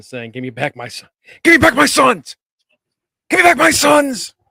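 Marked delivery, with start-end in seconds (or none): 1.4-4.3 very loud, very high, rising, escalating scream. Acting out an imagined promo: screaming like Mel Gibson. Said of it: "screaming like Mel Gibson".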